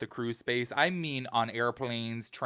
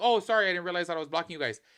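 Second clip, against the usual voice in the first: mock easygoing, polite, friendly, apologetic tone; 4 semitones higher than usual. Retelling a man apologizing for blocking the view: imitating a friendly apology. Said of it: "very friendly".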